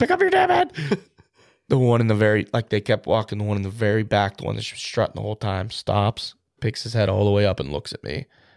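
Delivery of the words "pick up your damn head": acted, shrill, very high screech. Retelling calling out to a bird to lift its head: retelling own scream. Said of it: "I'm screaming up".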